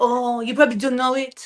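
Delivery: imitated French accent. Retelling what a French best friend said about Christmas songs: imitating Pierre's French accent. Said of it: "he gets so mad when I do this accent".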